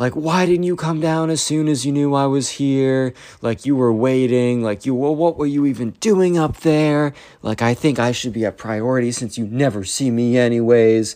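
high, angry ranting scream. Retelling a story of an aunt yelling at her nephew: imitating a screaming aunt. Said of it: "the aunt is screaming and yelling".

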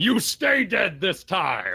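high, furious, enraged rage yell. Entering a rage in battle with Stanley's encouragement, rage yelling. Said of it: "I will enter my rage yelling".

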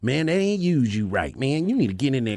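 put-on, coaxing shady uncle character voice. Acting out what everybody told someone who went home, in a shady uncle voice. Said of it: "That was the shady uncle voice".

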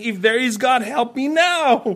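high, mocking sarcastic plea. Retelling how a nonbeliever calls on god: imitating a sarcastic cry. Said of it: "crying out in a sarcastic way".

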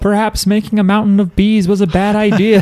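put-on high yelling.

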